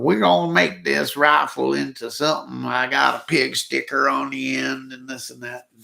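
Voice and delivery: spoof voice talking like a hillbilly. Recreating the start of his rifle video: hillbilly voice spoof. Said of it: "I'm talking like a hillbilly".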